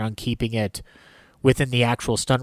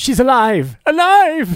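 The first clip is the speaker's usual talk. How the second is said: very high, swooping, swinging sing-song cry; 13 semitones higher, 7 dB louder than usual. Quoting Frankenstein's catchphrase from the film scene: imitating Frankenstein's catchphrase. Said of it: "says part of his catchphrase".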